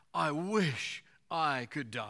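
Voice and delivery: slow, loud, drawn-out delivery.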